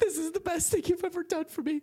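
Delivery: very high, tearful voice, crying through speech. Acting out a son thanking his dad for a wedding gift: son crying while talking. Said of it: "the kid's crying".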